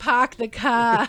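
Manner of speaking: put-on Boston accent. Complaining that Octavia won't stop doing her accent, imitating Octavia's Boston accent. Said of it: "going for a Boston accent".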